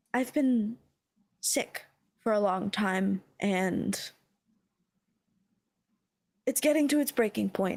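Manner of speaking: hushed, whispering voice. Voicing a sick character confiding in a player: whispering. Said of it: "she, uh, whispers to you".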